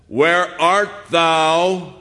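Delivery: very loud, harsh, stern accusing tone, "thou" drawn out. Retelling how God's question to Adam is often heard, mock-stern accusing tone. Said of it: "So often we hear that as, where art thou? As an arresting officer".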